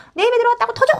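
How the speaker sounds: high, loud crying tantrum wail. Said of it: "하고 막 우는 거죠".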